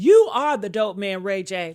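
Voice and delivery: loud, full-chested, confident, bold delivery, acted out. Retelling a man's public accusation: imitating a bold accusation. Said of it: "He said that with his whole chest".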